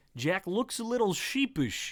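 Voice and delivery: ordinary talk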